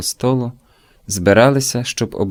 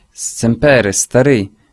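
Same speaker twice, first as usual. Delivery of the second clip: exclaiming, calling out; 4 dB louder than usual. A man greets the narrator's father at the door, exclaiming. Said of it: "вигукнув Барсело".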